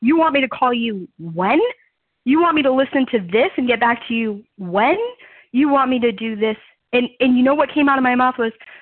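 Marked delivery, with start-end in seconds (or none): 0.0-6.6 stunned, incredulous, can't-believe-it tone. Retelling what a helper asked her to do: retelling own shocked disbelief. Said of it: "I was absolutely shocked".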